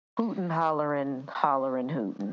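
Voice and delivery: plain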